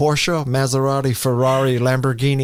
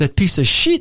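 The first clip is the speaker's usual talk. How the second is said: fake put-on French accent, higher; 5 semitones higher than usual. Retelling a reply to a former boss at Apple: put-on French accent.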